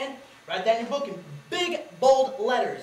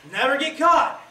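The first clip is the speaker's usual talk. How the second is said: repeated louder, voice raised up a notch; 4 semitones higher, 6 dB louder than usual. A boy, told to stand up and say it louder, repeats the phrase louder on command. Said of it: "say it louder".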